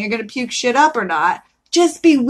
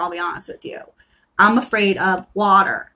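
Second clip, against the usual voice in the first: ordinary talk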